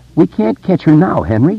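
said uneasily, ill at ease. Narrating Victor speaking to Henry, uneasily. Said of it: "Victor said uneasily".

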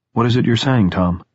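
ordinary delivery

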